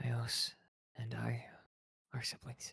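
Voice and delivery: hushed whisper. In a tabletop game, the player's character leans in to Sincere, whispering. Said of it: "I'll lean into the Sincere and I'll whisper".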